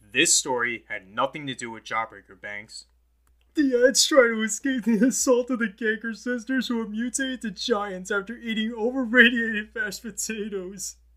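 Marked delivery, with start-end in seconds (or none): 3.5-10.9 very high, loud, can't-stop-laughing delivery. Explaining the story of Ed's dream, unable to stop laughing while speaking. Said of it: "I can't stop laughing when I explain this story".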